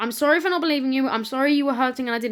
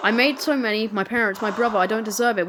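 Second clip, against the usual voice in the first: plain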